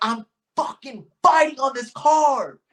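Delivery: mock shrill, very high, loud, frantic screaming. A fighter recounts being kept from his coach before a fight, retelling his own screaming. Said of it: "I'm screaming and yelling".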